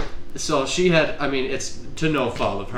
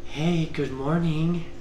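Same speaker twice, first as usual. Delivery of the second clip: heavenly, angel-like voice; 4 semitones higher than usual. Retelling a voice heard while dreaming, in an angelic voice. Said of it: "I just hear this like angelic voice from heaven".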